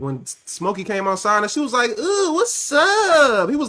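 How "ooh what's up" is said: high voice, drawn out with rising pitch. Quoting a line from the movie Friday: imitating the girl from Friday. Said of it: "You sound like the girl from Friday".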